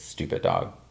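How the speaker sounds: hushed, whispered mutter under the breath. Retelling what a woman said at a door: imitating someone muttering under her breath. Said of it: "under her breath".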